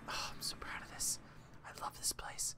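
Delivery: soft, proud whisper.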